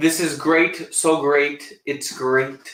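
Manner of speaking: shaky, unpracticed, fumbling put-on politician voice. Trying out a voice they don't know very well, in a shaky Trump voice. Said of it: "talking in a Trump voice".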